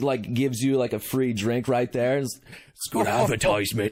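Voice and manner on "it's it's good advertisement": low, confiding, stage-whispered aside. The man at the Boulder Inn, offering the champions a free drink, whispering as the innkeeper. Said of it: "as he whispers to you".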